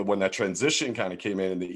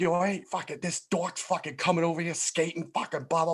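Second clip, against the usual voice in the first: put-on heavy New Jersey accent, much higher pitch; 9 semitones higher than usual. Retelling another skater's reaction to him, in a thick jersey accent. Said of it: "he has this thick ass Jersey accent".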